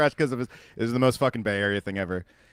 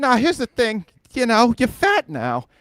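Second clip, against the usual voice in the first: squeaky, very high comic delivery, pushed way up; 12 semitones higher, 4 dB louder than usual. Retelling a podcast exchange, imitating Bill Burr. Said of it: "Bill Burr would be like".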